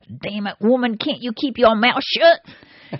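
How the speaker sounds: mock words squeezed out through clenched teeth. Telling a joke, the speaker acts out a driver speaking to his wife through clenched teeth. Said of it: "says through clenched teeth".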